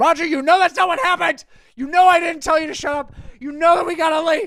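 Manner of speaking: very loud, high-pitched scolding yell. Retelling what the speaker yelled over to Roger, retelling a yell. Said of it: "I just yelled that over to him".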